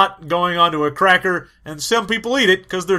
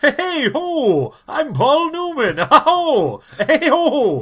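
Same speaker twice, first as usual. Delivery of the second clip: high-pitched, very slow drawl; 9 semitones higher than usual. Showing how a named actor sounds: Paul Newman impression. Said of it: "he sounds like".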